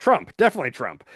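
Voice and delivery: acted-out, amused, giggling, laughing through the words. Retelling a podcast guest's answer on worst diet, imitating a giggling reply.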